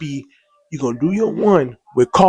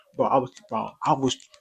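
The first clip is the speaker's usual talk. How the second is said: usual speaking voice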